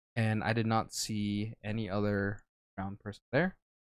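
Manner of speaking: ordinary talk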